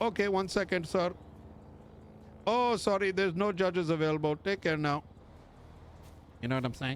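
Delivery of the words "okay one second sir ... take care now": put-on pitched-up Indian accent. Mocking a robotic cop by imitating indian tech support: indian tech support voice. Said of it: "like Indian tech support".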